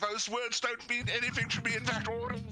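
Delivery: very high, shrill yelled shout. Answering a companion in character as Thorn: shouting back. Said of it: "Thorn shouts right back".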